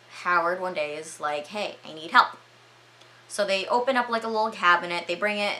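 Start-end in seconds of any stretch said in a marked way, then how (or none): none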